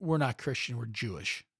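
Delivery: mock super serious deadpan delivery. Retelling a man's reply after a holiday greeting: imitating a super serious deadpan reply. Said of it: "he was, like, super serious".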